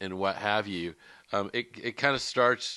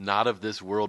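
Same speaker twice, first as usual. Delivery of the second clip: normal talking voice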